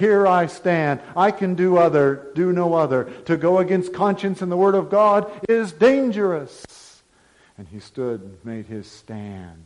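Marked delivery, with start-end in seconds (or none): 0.0-7.0 louder, higher, ringing proclaiming voice. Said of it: "the words of Martin Luther ring out today".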